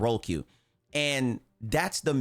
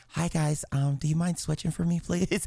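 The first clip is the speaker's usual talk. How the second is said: put-on, pitched-up, soft, non-threatening feminine voice; 5 semitones higher than usual. Retelling asking teammates on the game mic to switch: imitating own put-on feminine voice. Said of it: "I gotta put a lot of estrogen in my voice".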